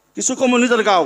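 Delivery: ordinary delivery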